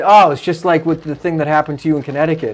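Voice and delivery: ordinary talk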